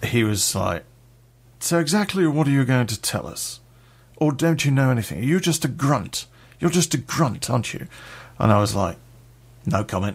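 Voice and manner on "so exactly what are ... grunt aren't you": put-on cut-glass, very posh upper-class English accent. Retelling a police officer questioning the speaker in an interview room, very posh accent. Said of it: "very posh accent".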